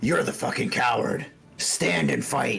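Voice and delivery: rough, creaky, hurt hobgoblin voice, jeering. Voicing a wounded hobgoblin who holds his ribs as a fighter flees: wounded hobgoblin taunting. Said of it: "holds his rib cage and goes".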